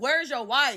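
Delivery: mock furious, loud angry shouting. Retelling a confrontation with a married man at the terminals, re-enacting a yell. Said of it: "Now I'm yelling like".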